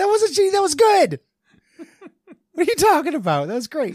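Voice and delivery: voice shooting up very high, swooping. Defending a joke that the other speaker called shitty: voice going up. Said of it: "'cause the voice went up".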